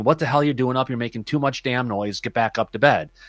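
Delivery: ordinary talk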